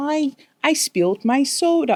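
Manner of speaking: put-on very high, toddler-like baby talk. Giving an example of how he talks, in baby talk. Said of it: "an example of what baby talk is".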